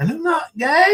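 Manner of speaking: voice suddenly jumping very high-pitched. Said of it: "And his voice gets real high".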